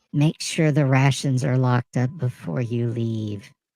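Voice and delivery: theatrical put-on stage whisper. Game master voicing a character who leans toward a player, in a fake stage whisper. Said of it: "says in a faux sotto voce voice".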